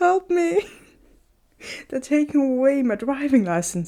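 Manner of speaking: put-on high, tearful crying voice. Retelling a phone call to a brother: imitating own past crying. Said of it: "Me crying on the phone and being like".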